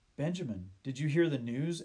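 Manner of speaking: ordinary delivery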